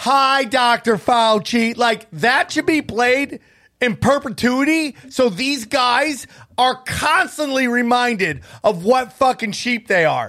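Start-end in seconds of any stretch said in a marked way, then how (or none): 0.0-1.8 eager crowd of voices speaking in unison. Retelling how people on a show greeted a guest: imitating a group greeting in unison. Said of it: "together in, like, harmony, they're like".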